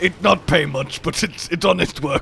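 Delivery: put-on grunting orc voice. Having enlisted with the local orc warlord, the speaker now talks in a grunting orc voice. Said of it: "Talking like this, contractual obligation".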